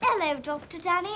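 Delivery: put-on affected British accent. Recapping a movie, imitating Maggie practicing: Maggie's put-on British accent. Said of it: "she's working on her British accent".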